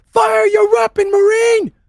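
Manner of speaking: very high, very loud, shrill, drawn-out scream. Voicing a character who backs away and screams at a marine: screaming an order. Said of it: "screams at you".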